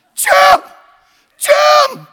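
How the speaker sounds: piercing, shrill, very high and loud scream. Retelling how his wife called him from the corner, retelling a scream. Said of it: "she screams".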